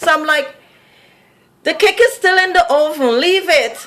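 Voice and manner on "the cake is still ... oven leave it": put-on oven said in her own accent, pitched up. Retelling what she said to a little boy while baking: imitating her own accented "oven". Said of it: "it's not oven, it's oven".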